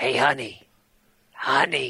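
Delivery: put-on whisper. Retelling how a dancer called to the speaker at the table, retelling her whisper. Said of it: "she's like whispering".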